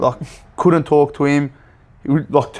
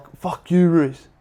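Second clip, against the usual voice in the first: put-on, imitated scream; 3 semitones higher than usual. Retelling how the Auckland assistant screamed across the pitch: imitating someone screaming. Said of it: "He's screaming like".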